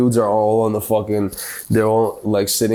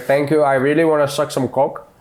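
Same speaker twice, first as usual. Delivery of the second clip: put-on Indian accent, pitched higher; 5 semitones higher than usual. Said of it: "Try say an Indian voice".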